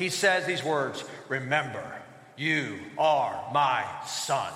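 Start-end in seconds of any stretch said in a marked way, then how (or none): 1.3-4.5 low, unhurried lion voice. Speaker quoting the lion father's words to his son from the movie, in a Mufasa deep lion voice. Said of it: "and in a deep lion voice".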